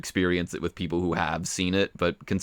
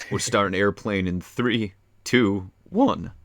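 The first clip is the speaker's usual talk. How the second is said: voice cracking. Speaker starting a group movie watch with friends, voice cracking. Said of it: "voice crack".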